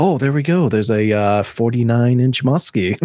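put-on calm, soothing tv painter voice. Imitating a kayak angler catching a muskie: Bob Ross voice. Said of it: "he's got that Bob Ross voice".

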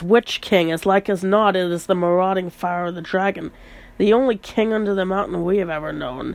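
ordinary delivery

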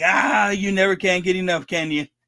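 normal talking voice

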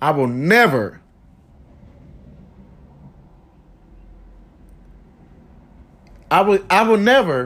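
emotional, struggling through words. Answering an anonymous cyberbully who attacked them online, choking up. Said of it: "I'm trying to make it through this".

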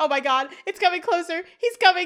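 high, loud, terrified yell. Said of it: "Angela starts yelling".

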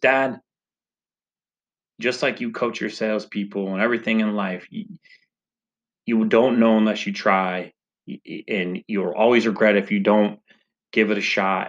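plain

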